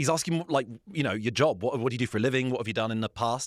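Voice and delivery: ordinary talk, nothing marked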